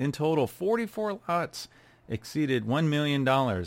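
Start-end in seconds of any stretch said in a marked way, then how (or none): 0.0-1.7 voice breaking up partway through. Reading out auction sales totals, voice cracking. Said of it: "my voice cracked when I said that".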